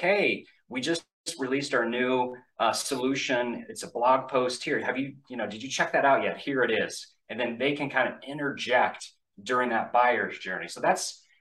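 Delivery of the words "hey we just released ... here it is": usual speaking voice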